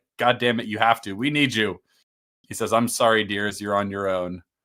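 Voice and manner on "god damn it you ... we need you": put-on, mock-angry, pleading outburst. Retelling how characters beg a man to drink a potion, mock-angry demand. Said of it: "devolves into like angry".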